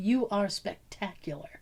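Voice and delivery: quiet, soft, creepy whisper. Retelling what a friend said to an actor after a show: imitating a whisper. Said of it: "clutched it and whispered".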